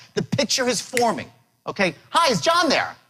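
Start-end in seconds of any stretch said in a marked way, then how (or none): 2.1-2.9 eager, excited, enthusiastic, upbeat delivery, pitched up. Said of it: "I'm excited, I'm upbeat".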